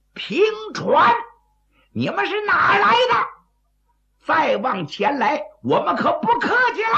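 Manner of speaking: very high, loud bellowing shout.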